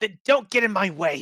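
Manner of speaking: shaken, high, loud hiss. Narrator voices Tigraria answering whatever spoke to her, hissed. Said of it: "she hissed".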